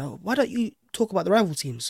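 ordinary delivery

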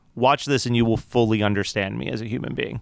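ordinary talk, nothing marked

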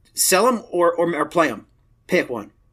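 ordinary talk, nothing marked

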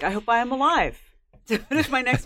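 light, half-joking tone with very high voice. Retelling what they told a proprietor at a book event, retelling a joking remark. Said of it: "somewhat jokingly".

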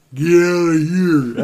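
put-on French accent. Retelling how a friend said something to them in a playful shove, imitating his slight french accent. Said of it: "sound just like a little French accent".

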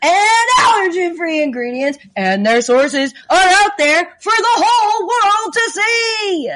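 stadium announcer voice. Reading an ad as if in an empty stadium: stadium announcer voice. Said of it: "I'm kinda just going with an announcer".

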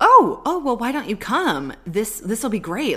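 bubbling over with excitement, high and loud. Recapping a scene, acting out Phoebe's invitation, mock-excited Phoebe. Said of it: "she's all excited".

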